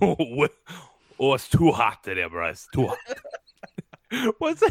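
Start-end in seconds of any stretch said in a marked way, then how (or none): 0.0-3.0 voice forced through gritted teeth. Mid-conversation, the speaker breaks into Clint Eastwood talking through his teeth. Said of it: "Just talk through your teeth".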